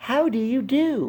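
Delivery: thin, very high-pitched voice. Narrator reading a female character's greeting, in a high, thin voice. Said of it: "she said in a high, thin voice".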